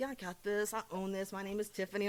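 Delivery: ordinary delivery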